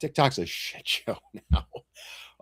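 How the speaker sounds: breathy, whispered words broken by hard laughter. Joking about losing views on TikTok, laughing hard while talking. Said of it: "which is why I'm laughing so hard".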